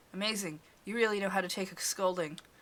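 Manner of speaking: ordinary delivery, nothing marked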